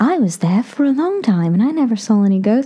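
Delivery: fake British accent. Retelling what a woman said while saying goodbye, put-on British accent. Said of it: "That was my British accent".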